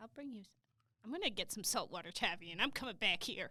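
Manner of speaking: menacing, threat-laden, threatening tone. Chatting with two others, the speaker unintentionally uses a threatening voice. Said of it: "you're doing the threaten voice".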